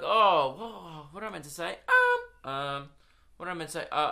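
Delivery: high, swooping, wavering, lost-for-words stalling ums. Showing how thinking out loud sounds: imitating own high-pitched um. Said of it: "in a really high-pitched voice".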